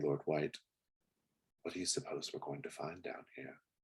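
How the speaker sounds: quick, hushed, close half-whisper. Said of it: "she whispers in your ear".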